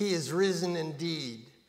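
normal talking voice

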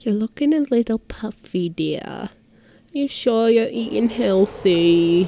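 put-on New Jersey accent in an older woman's voice.

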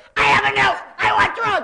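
very loud, very high-pitched, shrill screaming. Recalling being wheeled up by an older volunteer and screaming at her: retelling a scream. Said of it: "And I'm screaming in her face".

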